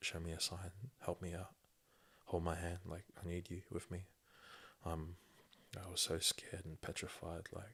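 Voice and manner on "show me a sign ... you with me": put-on tearful, crying, pleading tone. Retelling crying and begging to the Lord in church: retelling a tearful plea. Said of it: "was crying, begging to the Lord".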